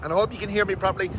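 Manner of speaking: talk rattled off very fast. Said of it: "Now I'm talking very fast".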